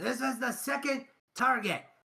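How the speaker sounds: high, loud, carrying yell. Voicing a game character announcing the next target: NPC yelling out. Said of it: "he'll yell out".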